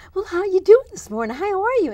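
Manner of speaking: very high, loud, gushing, gabby cheer. Describing calling customer service, imitating the rep's high-pitched voice. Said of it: "just such high pitched voice".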